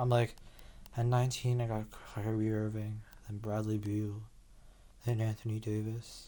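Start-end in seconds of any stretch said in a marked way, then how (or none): 1.0-6.3 very quiet, flat, listless, depressed monotone drone. Pausing a video to mimic how flat they sounded earlier: imitating own depressed-sounding voice. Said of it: "I don't know why I sound so depressed".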